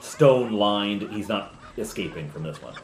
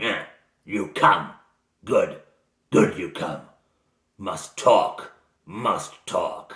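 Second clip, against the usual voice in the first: loud, snarled, broken speech; 5 dB louder than usual. Game master voicing a bound prisoner as the players enter his cell, snarling Garrick voice. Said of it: "he snarls at them".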